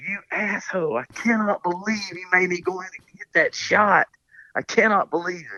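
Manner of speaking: mock high-pitched cussing rant. Retelling how he came out of the water cussing: imitating someone cussing. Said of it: "he comes out there cussing me".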